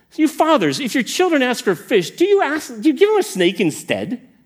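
acted, put-on incredulous disbelief. Quoting a question from two curious story verses, mock-incredulous. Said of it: "Do you hear the incredulity in his voice?".

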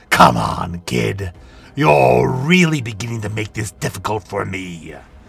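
growled, ground-out words. Reading a story, the narrator voices a man speaking to a boy, growling. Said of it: "he growled".

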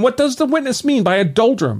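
exclaiming, pitched very high. In court, Lord Avonmere turns to Curran about the witness: exclaiming. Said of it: "exclaimed Lord Avonmere".

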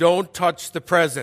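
loud, godlike deity voice. Retelling a warning called from the kitchen: imitating a godlike voice. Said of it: "in a godlike voice".

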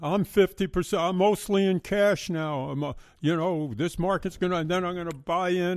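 put-on, high-pitched hollering TV pundit bluster rant. Imitating the TV guy who yells at you all the time: imitating Kramer yelling. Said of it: "he's yelling".

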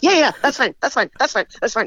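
stuttering, tripping over words. Retelling a night porter's flustered reply, imitating someone stuttering. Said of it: "he just stuttering".

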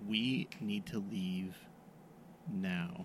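put-on close whisper, very quiet and slow. Playing a character who urges another to leave at once: whispering in character. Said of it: "I am going to whisper to him".

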